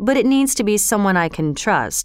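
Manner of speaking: usual speaking voice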